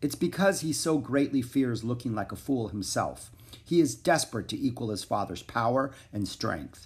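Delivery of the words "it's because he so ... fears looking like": usual speaking voice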